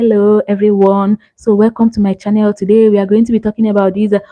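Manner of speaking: calm, cool, collected, easygoing delivery. Demonstrating a voiceover style an ai tool can generate: calm, cool, collected. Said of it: "the voice that is calm, cool, collected".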